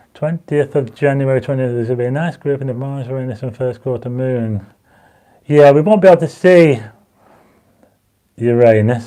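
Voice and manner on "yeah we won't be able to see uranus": holding back a laugh, stifled giggle under words. Answering a viewer comment while reading comments, trying not to laugh.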